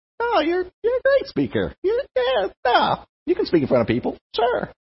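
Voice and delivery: very high, swooping, condescending, patronizing sing-song. Speaker imagines being complimented insincerely, mock-patronizing God, voice rising. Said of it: "their voice goes up".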